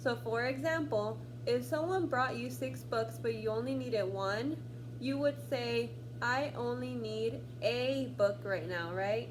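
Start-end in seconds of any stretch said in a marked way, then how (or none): 6.2-8.9 a leaned on and pronounced as ay. Pronunciation lesson, needing only one book: stressed a said ay. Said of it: "when it receives stress, you pronounce it A".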